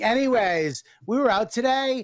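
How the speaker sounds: mocking overly loud voice. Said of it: "don't know how to talk your loud level".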